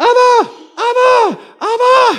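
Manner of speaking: put-on very high, tiny little girl's calling cry. Retelling a walk where a little girl ran past calling out, in a small little girl voice. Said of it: "I hear this small little voice going".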